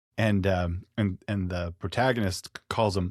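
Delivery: ordinary delivery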